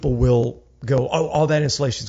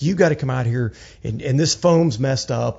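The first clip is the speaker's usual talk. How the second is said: ordinary delivery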